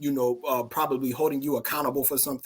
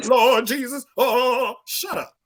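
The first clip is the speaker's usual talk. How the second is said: mock panic, higher and louder; 10 semitones higher, 6 dB louder than usual. Mocking a type of person who has no money: imitating someone panicking. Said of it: "you sitting there panicking".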